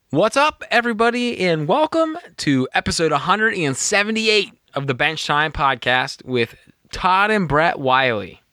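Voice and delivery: cracking voice, rising then dropping. Opening a podcast episode as host: voice cracking up and down. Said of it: "Your voice cracked, and then you went up, and then you went down".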